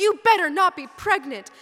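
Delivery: very loud, high-pitched, panicked outburst. Retelling what mom shouted at the speaker, retelling mom's shout. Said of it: "she shouts".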